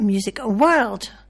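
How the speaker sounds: very slow, drawn-out delivery. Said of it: "I'm not talking slow".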